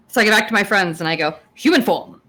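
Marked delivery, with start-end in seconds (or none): 1.6-2.1 booming, theatrical put-on voice, higher. Speaking in character after turning back into human form: Matt Berry voice. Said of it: "Why did you sound like Matt Berry?".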